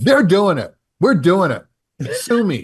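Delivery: mock, heated, furious, high-pitched, swinging angry rant. Retelling what they said to a woman screaming back, re-enacting an angry outburst. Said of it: "I went off".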